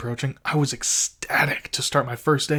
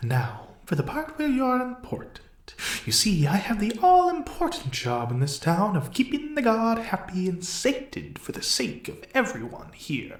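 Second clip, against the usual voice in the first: sadistic grin, pitched up, swooping; 8 semitones higher than usual. A character explaining the listener's part to them, with a sadistic grin in his voice. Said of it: "a sadistic grin in his voice".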